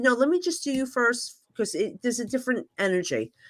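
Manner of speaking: normal talking voice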